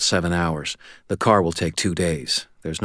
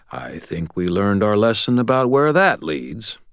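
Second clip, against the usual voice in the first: biting, sour, caustic delivery; 3 semitones higher than usual. Martin replies to the narrator in a story reading; acidic voice. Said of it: "Martin said in an acidic voice".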